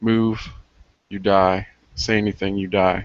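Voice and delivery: very soft, cold, menacing whisper. Voicing a character who grabs a man from behind: very soft cold whisper. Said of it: "A very, very soft, cold whisper".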